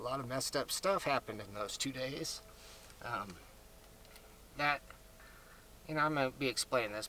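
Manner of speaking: emotional, soft, choking up mid-sentence. Recounting two days when messed-up things happened, getting choked up. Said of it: "I'm just getting choked up a little".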